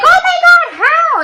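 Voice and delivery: very high, very slow, stretched-out, drawn-out shriek. Telling about her first kiss, she acts out her friends' reaction, retelling friends yelling. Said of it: "They started yelling like".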